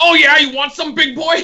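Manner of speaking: acted-out, very high, erratic screamed outburst. Telling others about a woman eating in the corner, imitating a woman screaming. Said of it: "screaming out random things".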